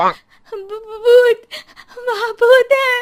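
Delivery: very high, very loud, slow rising terrified shriek. A woman cries out to neighbours on their balconies at midnight, screaming in fear. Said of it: "डर से चिल्लाने लगती है".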